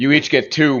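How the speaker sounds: booming shouted voice. Playing a character in a tabletop game, booming shout. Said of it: "My booming voice shouts".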